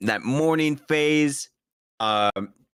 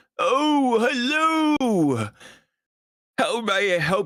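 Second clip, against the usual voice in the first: put-on very slow, high, aged old-person voice; 8 semitones higher than usual. In a role-play, the narrator voices a librarian looking up from his desk, old librarian voice. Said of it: "There's this like old librarian".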